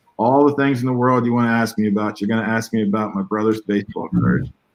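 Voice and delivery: ordinary talk, nothing marked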